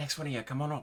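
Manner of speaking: theatrical whisper. At an opened window, calling the others up one by one: stage whisper. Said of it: "so it's like a sage whisper".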